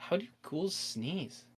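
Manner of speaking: hushed, whispered pondering, thinking aloud. A character holding your hands behind your back sits pondering aloud. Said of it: "He's like sitting there like pondering".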